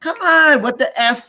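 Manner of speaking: put-on screaming voice. Retelling how a store owner came out to a cop, imitating someone screaming. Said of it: "he's screaming".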